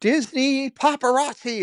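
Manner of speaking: play-acted, shrill, all-out excited top-of-lungs scream. Retelling how a cast member greeted the speaker: imitating someone screaming. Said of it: "she screams at the top of her lungs".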